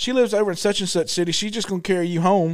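normal talking voice

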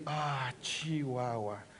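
very deep, soft, sorrowful, hushed murmur. Teaching a group to say a word with emotion; sad. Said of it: "When you are sad, you can say".

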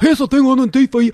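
put-on rough Scottish accent. Retelling how a drunk man at a club door spoke: imitating a rough Scottish accent. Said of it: "he had that kinda Scottish".

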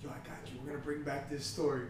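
quiet whispered voice. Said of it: "I'm here whispering in Sam's ear".

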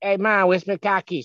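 loud, put-on Boston accent, pitched very high. Imitating how people from Boston talk, in a put-on Boston accent. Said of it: "Irish people that talk like that, because Boston".

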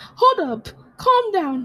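very high, stretched, drawn-out yell. Talking to themself while reading something out, yelling at self. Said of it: "I'm yelling at myself".

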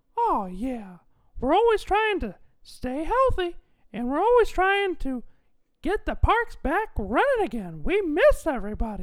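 squeaky voice, pitch bouncing up and down. Answering the host's question about the parks, in a Mickey Mouse voice. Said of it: "Mickey Mouse, how are you?".

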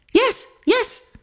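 acted-out, eager, very high-pitched voice. The narrator answers a man asking if he reads Chinese, eager. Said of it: "I replied eagerly".

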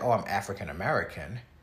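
normal talking voice

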